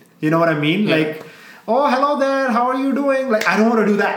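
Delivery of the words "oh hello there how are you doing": put-on clichéd Indian accent. Describing the accent he wanted to stop sounding like, putting on a stereotypical indian accent. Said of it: "stop sounding like a stereotypical Indian at a gas station".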